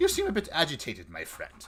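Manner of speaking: calm, condescending tone. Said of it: "talking down".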